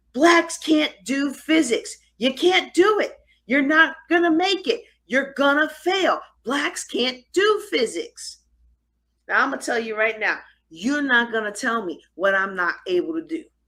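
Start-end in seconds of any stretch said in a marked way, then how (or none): 0.1-8.3 mock, high-pitched shouted outburst, finally cracking. Retelling how someone finally shouted at them after arguing: imitating someone shouting. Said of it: "he finally shouts out".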